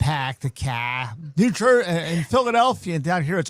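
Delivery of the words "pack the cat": Boston accent, dropped r sounds, much slower. Explaining regional ways of saying R, demonstrating a Boston accent. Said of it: "Boston, ah".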